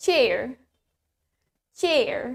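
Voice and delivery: US-accented pronunciation. Teaching a word's pronunciation to learners, now the american version: american accent. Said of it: "Now in American".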